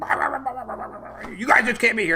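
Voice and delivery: acted-out, high, angry barked gibberish, then dismissive. Retelling a confrontation, imitating a woman who started barking at them. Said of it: "she started barking".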